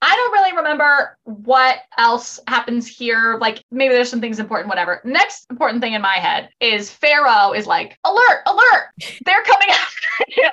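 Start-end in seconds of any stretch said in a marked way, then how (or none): 8.0-10.5 very high, siren-like blaring alarm sound. Recapping a show episode, quoting a warning: imitating Pharaoh's alert call. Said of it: "He says it just like that".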